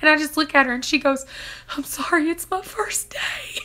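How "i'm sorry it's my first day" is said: mock whispered, breathy, slow bawling through tears. Retelling giving birth, quoting a nurse in tears: imitating a bawling nurse. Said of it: "she is just bawling".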